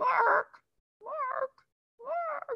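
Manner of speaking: soft, tiny, very high puppet-like call. Recalling walking down a hall, the speaker hears a doll call out, little Arthur puppet voice. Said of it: "I heard this little voice behind me".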